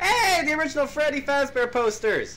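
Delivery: loud, very high, thrilled, excited outburst. Player sneaking past someone unnoticed in a game, then loud and excited. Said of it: "Sorry if I'm being loud".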